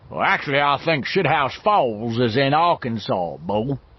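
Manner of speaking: big, loud, hollow, barrel-chested booming voice. Reading a novel, a character puts on a comic voice: Buford Kissdrivel big hollow barrel voice. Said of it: "in his big, hollow barrel voice".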